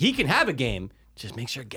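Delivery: ordinary talk, nothing marked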